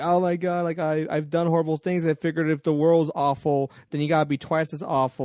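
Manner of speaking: tearful, crying, broken-down voice. Retelling a comic scene where the Comedian breaks down: imitating the Comedian crying. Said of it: "he's crying. He's going like".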